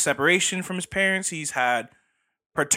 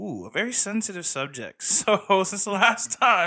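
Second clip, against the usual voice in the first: talking while laughing, words pushed through laughter; 4 semitones higher than usual. Co-host bringing up the next topic, laughing while talking. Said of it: "why are you laughing?".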